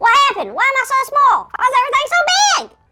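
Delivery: high, squeaky cartoon chipmunk voice. A character who just shrank panics in front of the kids, squeaky chipmunk voice. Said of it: "Why do I sound like a chipmunk".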